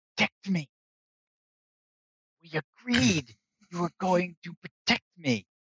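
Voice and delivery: stammering mumble. Narrator voices Maverick leaning over to the dwarf, Maverick stuttering and mumbling. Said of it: "Maverick kind of stutters and mumbles".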